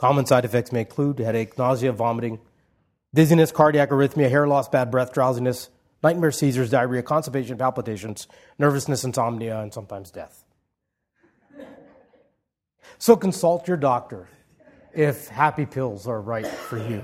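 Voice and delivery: low flat monotone announcer voice, fading into background. Mocking the small-print announcer at the end of a pill commercial, monotone announcer voice. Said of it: "He has the monotone evaporate into the background voice".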